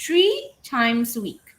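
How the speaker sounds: stress on three. Teaching sentence stress with an example phrase: stress on three. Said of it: "stress the word tree, right? Um, louder compared to times".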